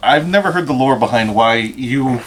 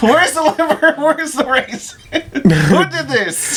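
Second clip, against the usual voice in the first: mock very high, stretched-out, drawn-out shouting. Retelling what another speaker said one Christmas: imitating someone yelling. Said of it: "You yelled".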